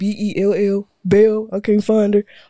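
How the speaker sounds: very slow, dragged-out put-on voice. Imitating people who can't find the handle: deep put-on voice. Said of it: "Who deep voice was that?".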